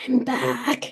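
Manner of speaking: hoarse, rasping, raspy rough voice. Retelling first words after waking from a coma: imitating own raspy, bad voice. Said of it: "my voice was really raspy and bad".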